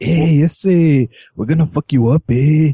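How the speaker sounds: slow, drawled, generic urban tough-guy street voice. Describing how the cartoon turtle talked, in a generically urban Michelangelo impression. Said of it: "He was very generically urban".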